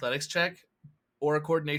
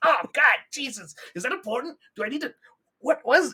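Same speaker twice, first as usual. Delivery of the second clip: high, loud, flustered sputtering outburst. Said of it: "he's just like".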